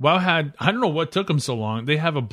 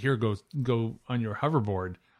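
normal talking voice

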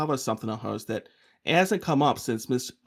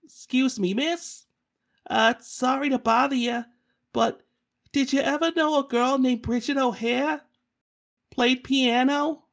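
put-on very high, hopeful, polite kid voice; 11 semitones higher than usual. Showing how to approach a woman to ask about someone, pitched up like a kid. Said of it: "pitch the voice up a couple steps like a kid".

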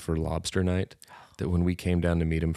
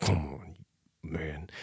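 mock muttering, quieter and slower; 6 dB quieter than usual. Retelling canoeing behind a lazy stranger, imitating your own muttering. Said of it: "you're mumbling under your breath".

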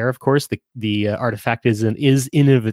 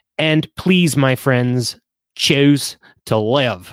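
horrible, bad put-on Australian accent. Addressing friends, the speaker puts on a horrible Aussie accent. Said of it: "That's my horrible, horrible Aussie accent".

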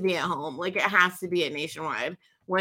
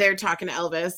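usual speaking voice

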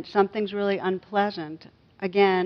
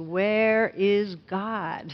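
play-acted stern, severe clergyman voice, raised and pressing. Telling a story, voicing the clergyman asking the boy again: mock-stern raised voice. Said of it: "the clergyman raised his voice even more and shook his finger".

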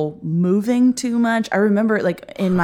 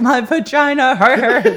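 high, raised, tearful sobbing voice; 5 semitones higher, 5 dB louder than usual. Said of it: "crying because I was like".

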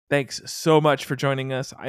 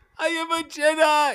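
very high, drawn-out, stretched voice. Reading a line from the script as instructed: Tracy Morgan voice. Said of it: "said like Tracy Morgan on thirty Rock".

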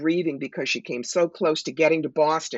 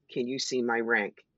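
hushed, very quiet, soft, barely voiced; 4 semitones lower, 6 dB quieter than usual. Retelling a question about her past-life rank: imitating someone speaking very quietly. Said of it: "says very quietly".

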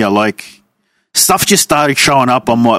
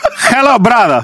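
high, bad Middle Eastern accent slipping into Russian; 8 semitones higher than usual. Trying out a put-on accent for the others, an attempted accent that sounds Russian. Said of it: "that's Russian".

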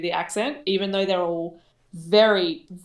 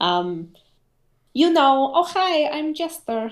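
put-on Eastern European accent, much higher and slower; 8 semitones higher, 4 dB louder than usual. Showing the accent you slip into when gaming, Jester's Eastern European accent. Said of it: "Like that whole accent".

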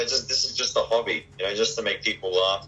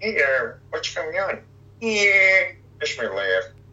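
goofy cartoon voice, high and slow; 7 semitones higher, 3 dB louder than usual. Showing the first voice he started doing: Peter Griffin voice. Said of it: "Peter Griffin was the first voice that I started doing. You know, it's like".

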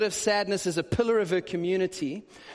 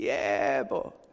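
creaking, creaky voice; 6 semitones lower than usual. Retelling a voice answering a knock from inside: imitating a creaking voice. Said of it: "a creaking voice".

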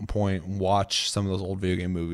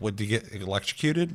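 ordinary delivery

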